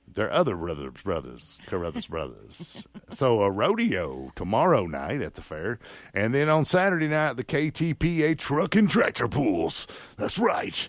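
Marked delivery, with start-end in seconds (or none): 6.2-10.9 hyped rural event promo announcer voiceover. Doing a voiceover for the weekend truck and tractor pull, tractor-pool announcer voice. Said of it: "You got to talk like this when you're having a tractor pool because it's insane action".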